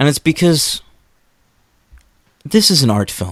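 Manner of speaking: gentle delivery with the edges rounded off. Explaining why a movie goes for realism, after announcing a softer tone. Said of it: "I've changed my voice".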